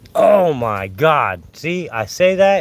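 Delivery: slow, loud, drawn-out, excited amazement.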